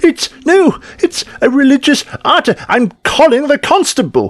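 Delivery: very high, indignant, irate outburst. Game master voices someone behind the players as they climb, irate voice. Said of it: "you hear an irate voice behind you going".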